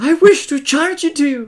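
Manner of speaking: shouted from a distance. Voicing a character who charges an elf, heard from a distance: shouted from a distance. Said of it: "You hear from a distance".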